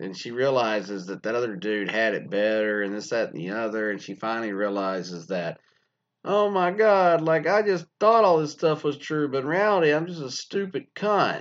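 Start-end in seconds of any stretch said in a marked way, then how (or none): 6.2-11.4 scornful, high-pitched, loud, derisive, mocking voice. Retelling a woman's realization in a story: mocking imitation of her. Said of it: "making fun of it".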